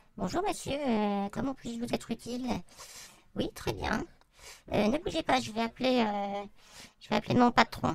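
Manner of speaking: put-on woman's voice. Demonstrating voices useful for role-playing games, speaker does a woman's voice. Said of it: "une voix de femme".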